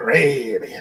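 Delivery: swashbuckling pirate-style accent on Caribbean. Showing how the word Caribbean should be said, in a pirate voice. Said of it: "You gotta say it like a pirate".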